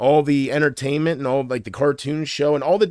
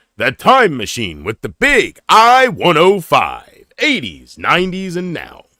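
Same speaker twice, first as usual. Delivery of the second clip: loud, hyped-up, swooping radio announcer voice; 7 dB louder than usual. Demonstrating an alternate voice they can do: radio announcer impression. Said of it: "what I do with the radio announcer impression".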